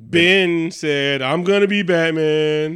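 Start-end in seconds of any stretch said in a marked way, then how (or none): 1.2-2.7 mocking goofy voice, stretched out very slow. Talking about DC movies, the speaker quotes an actor in a goofy voice mocking Ben. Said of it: "Why you give him that goofy voice".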